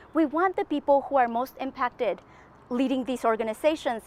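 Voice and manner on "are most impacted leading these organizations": ordinary talk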